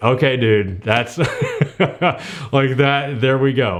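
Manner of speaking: speech mixed with laughter. Recalling reacting to an announcement minutes later, laughing.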